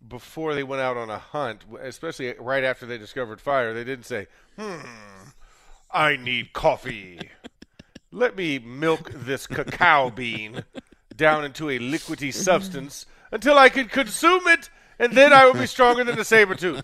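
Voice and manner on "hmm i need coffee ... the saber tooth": grand, loud, drawn-out theatrical stage voice. Speaker acts out what cavemen didn't say before a hunt, in a thespian-like voice. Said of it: "that thespian like voice that I just did".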